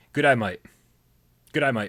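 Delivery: Australian accent, said fast. During an Australian accent lesson, repeating the phrase in a fast Australian accent. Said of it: "Say these words as fast as you can".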